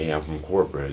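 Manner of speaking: ordinary delivery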